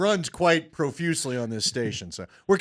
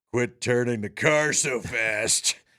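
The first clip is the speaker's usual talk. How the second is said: heavy, deep, low-dropped put-on voice; 6 semitones lower than usual. Retelling a man telling off an Uber driver in Seattle, in a deep voice. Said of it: "in a deep voice".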